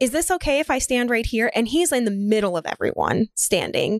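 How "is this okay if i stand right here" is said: put-on faux-innocent, mock-polite tone, dripping with sarcasm. Retelling what a kid standing in the way said: imitating a sarcastic kid. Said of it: "He was just being a sarcastic asshole".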